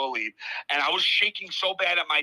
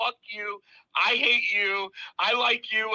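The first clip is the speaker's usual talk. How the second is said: mock furious, high, drawn-out angry outburst; 6 semitones higher than usual. Retelling walking out of the office, acting out an angry outburst. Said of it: "I went off".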